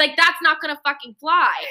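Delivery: put-on screaming. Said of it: "And so I'm screaming".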